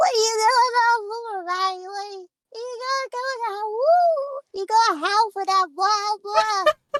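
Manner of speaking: very high, slow, crazed deranged pixie voice. Showing the voice she uses to get Riley howling, deranged pixie voice. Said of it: "I call it my deranged pixie voice".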